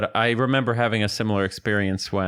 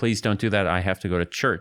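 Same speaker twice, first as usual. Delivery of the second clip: very plain, serious delivery. Retelling a neighbor's dad asking not to be squirted: imitating a plain, serious request. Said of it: "he said it very plainly and very seriously".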